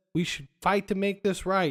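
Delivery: ordinary talk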